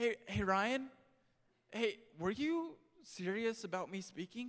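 play-acted scared, timid, kid-like voice. Retelling asking about speaking at an office door: imitating own timid asking. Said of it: "timid, kinda scared to ask, kinda like, you know, maybe his five-year-old child coming in".

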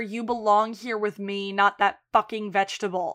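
mock whispering. Retelling a show scene where a character whispers in someone's ear: imitating a whisper. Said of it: "whispers in his ear".

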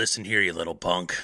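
low, stern scolding, close up. Imagining an actor scolding a boy nose to nose: Clint Eastwood scolding voice. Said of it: "imagine Clint Eastwood scolding Dennis the Menace".

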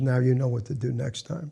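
ordinary talk

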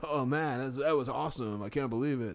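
talking like a surfer dude. Imitating how a baseball player talks: Nico Hoerner's surfer-dude talk. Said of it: "it's kinda funny to hear him talk".

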